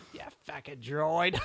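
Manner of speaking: put-on Australian accent. Voicing a character in a drifting British accent. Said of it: "That's more Australian, isn't it?".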